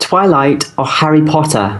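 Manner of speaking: slow, careful, put-on British accent. Asked by a co-host to say the question like a British person, British accent. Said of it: "Can you say it like a British person".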